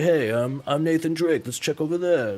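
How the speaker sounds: put-on New York mobster accent. Describing game voice acting styles, the speaker tries a casual line in a New York mafia guy accent. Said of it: "sounded kind of more like a New York kind of uh, mafia guy".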